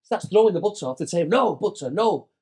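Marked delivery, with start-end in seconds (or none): 1.3-2.2 mock screamed, frantic screaming outburst. Retelling how the manager jumped up at the meal: imitating Capello screaming. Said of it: "Just screaming".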